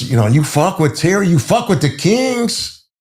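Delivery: put-on Puerto Rican accent, pitched very high. Retelling what a Latin King said in a standoff: imitating Carlos's Puerto Rican accent. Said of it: "He was Puerto Rican with his accent".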